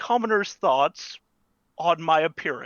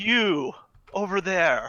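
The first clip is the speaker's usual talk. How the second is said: husky female voice calling out. Game narrator voices a stranger calling out to a player's character: husky female voice. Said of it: "husky uh, female voice say".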